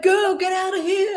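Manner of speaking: mock very high-pitched, drawn-out shriek. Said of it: "We're all screaming at the screen".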